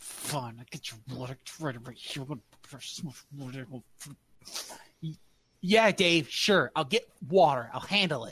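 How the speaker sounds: furious, fed-up delivery in a low voice. Agreeing to fetch water after dave asks for it, super pissed. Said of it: "This is super pissed for some reason".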